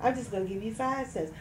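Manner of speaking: ordinary talk, nothing marked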